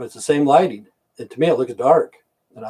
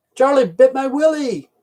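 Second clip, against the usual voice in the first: very high-pitched put-on English accent; 13 semitones higher than usual. In the middle of a rant, the speaker quotes a line in an english accent. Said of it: "with the English accent".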